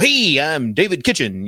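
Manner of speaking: teasing radio-host broadcast cadence. Retelling how the wife teases with a radio intro: imitating wife mocking radio cadence. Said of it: "sometimes even now she'll go".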